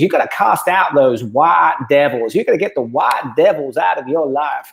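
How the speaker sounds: badly done, botched Southern American accent. Quoting a man who has a Southern accent, in a bad Southern accent. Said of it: "he's got this Southern accent. I'm going to ruin this accent right now".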